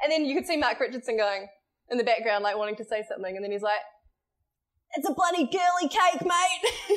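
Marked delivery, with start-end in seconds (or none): 5.0-7.0 mock very slow, high, drawn-out yelling. Retelling what a presenter yelled from the sports corner: imitating Mark Richardson yelling. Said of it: "Just yelled from the sports corner".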